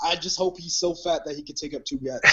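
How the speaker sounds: normal talking voice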